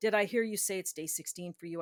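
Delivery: discreet, understated, gentle, low-key tone. Retelling a guy at the bar replying: imitating someone speaking quietly. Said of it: "he quietly said".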